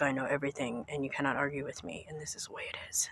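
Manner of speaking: put-on stern, level, unbending, flat lecturing monotone. Imagining how an author would talk to you: imitating a monotone, stern voice. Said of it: "this very monotone and stern voice".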